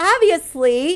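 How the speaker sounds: heavy emphasis on obviously. Teaching a spanish word, showing the phrase with a lot of emphasis. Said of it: "please say it with a lot of emphasis".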